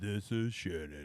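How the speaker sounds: deep, put-on radio announcer voice. Opening the recording after a week off, in a put-on deep radio voice. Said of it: "in my deep voice".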